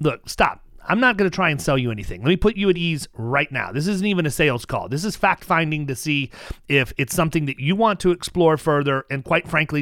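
ordinary talk, nothing marked

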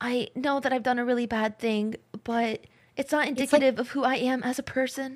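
English anime dub delivery. Acting out an apology from the guys, in English-dub anime voice acting. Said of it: "It's like anime voice acting".

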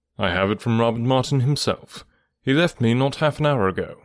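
plain

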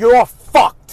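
stern, firm voice. Retelling what was said to a son on the phone: stern line. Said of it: "Just like that".

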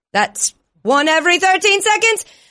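British football play-by-play announcer voice. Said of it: "as if you were the play-by-play announcer at a soccer slash football".

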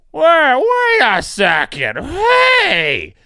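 very high, loud mocking voice. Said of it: "are now coming out and saying".

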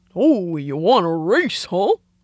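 silly cartoon character voice. Asked to revive an old impression from adolescence: Goofy voice. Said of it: "I used to have the best impression of Goofy".

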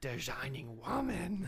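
puppet-style voice. A host naming the show they just watched, sounding like a Muppet. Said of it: "now you sound like a Muppet".

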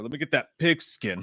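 put-on tough-guy talk. Retelling what they say to strangers at pickup sports: imitating own badass talk. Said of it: "why am I talking like I'm badass".

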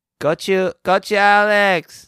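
very slow, high, drawn-out, deliberately irritating put-on voice. Calling on Alex to start the Spice Test: put-on annoying voice. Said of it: "Are you doing the annoying voice?".

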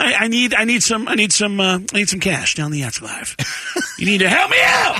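high-pitched put-on voice with wide, wild swoops. Retelling a prank call made in an impression: Sam Kinison impression. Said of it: "with that impression".

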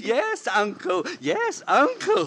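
taunting, mocking, high young-girl voice. Confronting the old man about his niece, mocking a young girl's voice. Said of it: "walk around like this and talk like this".

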